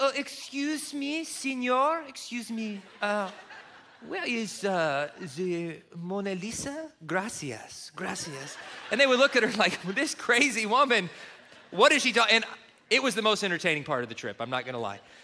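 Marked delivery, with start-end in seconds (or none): 0.0-8.6 bad French accent, spoken very slowly. Speaker acts out a woman stopping people on the street, bad French accent. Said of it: "English with a bad French accent".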